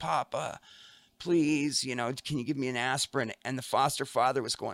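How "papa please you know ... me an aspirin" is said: mock crying child voice, tearful and pleading. Retelling how a hurt daughter asked for an aspirin: imitating a crying child. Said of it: "and she was crying".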